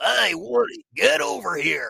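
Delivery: high, loud, raspy, folksy Alabama Southern voice. Calling out to Woody in the described character's voice, raspy folksy Southern voice. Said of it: "he has like a very raspy thing where he's just he's very like folksy".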